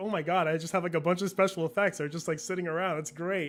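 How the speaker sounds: plain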